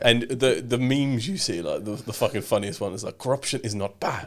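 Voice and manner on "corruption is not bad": put-on Nigerian accent. Quoting a meme about corruption from Nigerian politics: mock Nigerian voice. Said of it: "Are you allowed to do that voice".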